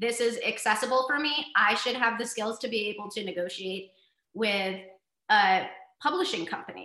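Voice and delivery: ordinary talk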